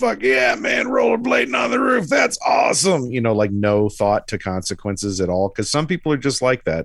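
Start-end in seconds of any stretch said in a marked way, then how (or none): 0.0-3.1 very high, shouting stoked dude voice. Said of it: "one of those guys who was like".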